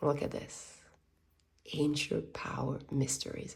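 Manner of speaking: low, soft, hushed near-whisper.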